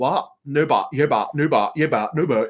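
put-on Bristol accent, laid on heavily. Act out a woman in Bristol answering kids who give her lip, in a Vicky Pollard voice. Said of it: "Vicky Pollard is supposed to be from".

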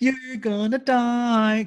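mock talking through a smile. Imitating a grinning character threatening death: imitating speaking through a smile. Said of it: "through his smile".

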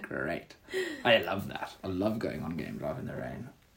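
sarcastic fake delight, swooping sing-song. Joking about going on game drive in the rain: sarcastic. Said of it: "I'm being sarcastic".

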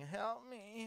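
high-pitched, put-on whiny voice. Retelling lying in bed sick: imitating own whining. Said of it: "I'm in bed whining".

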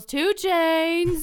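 put-on drunken shout. Describing a man who gets drunk and yells, the speaker imitates his drunk yell. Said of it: "he just gets drunk and yells".

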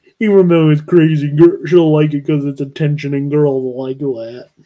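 dumb, knuckleheaded meathead voice. Imagining what a meathead writer thought, imitating a meathead writer. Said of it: "good impression".

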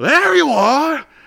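over-the-top, very high, very loud cartoony yell. Retelling him jumping on a desk and pointing: imitating a cartoony shout. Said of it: "in the most cartoony fashion possible".

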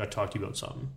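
put-on dead serious, grave tone. Retelling how he came in to talk: imitating someone being all serious. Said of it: "all serious".

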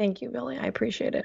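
sad tone. Thanking a fellow speaker for condolences about their dog, sad. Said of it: "I'm super sad".

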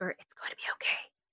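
very soft, breathy, hushed whisper under the breath. A player's character reassures a tiny octopus in a glass jar, whispering. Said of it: "I'll whisper".

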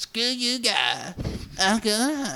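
put-on very high, swooping, half-done cartoon bratty kid voice. Showing a podcast partner how to pull off slang, half Cartman voice. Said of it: "kind of get half Cartman".

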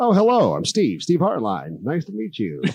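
high, slow, swooping, very animated voice. Recalling hearing a guy's actual speaking voice, Steve Hardline impression, animated. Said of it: "how do you have this such animated voice".

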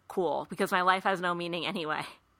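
plain

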